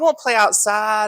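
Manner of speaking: put-on tiny, very high-pitched country toddler voice. A parent retells their two-year-old asking on the phone, in a country little-kid voice. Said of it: "he's got like the countryest little voice".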